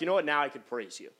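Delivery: normal talking voice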